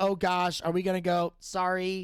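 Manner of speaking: ordinary talk, nothing marked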